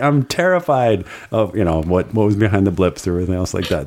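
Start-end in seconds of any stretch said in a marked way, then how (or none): 0.0-1.6 excited guy voice, higher. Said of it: "an excited way".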